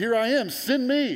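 high, loud, eager, blurted cry.

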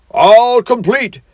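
triumphant, very high and loud. The toad pulls open a locker, triumphant. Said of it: "said the toad triumphantly".

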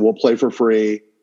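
ordinary talk, nothing marked

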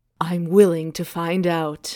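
growly dragon-man voice. Reading a romance aloud, voicing the dragon's reply to her, growling dragon voice. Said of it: "this voice is so many things".

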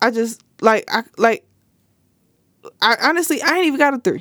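stuttering, stammering speech. Listing reasons for showing up late, stuck on the third: stuttering. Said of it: "I'm stuttering".

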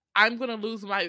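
ordinary talk, nothing marked

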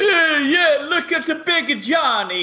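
put-on thick New York accent. Retelling how a promoted worker's coworkers teased him, thick new york accent. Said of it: "with these thick New York accents".

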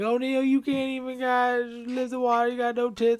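put-on high-pitched yelling. Retelling how the others yell at her in the movie: imitating someone yelling. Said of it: "they're yelling at her".

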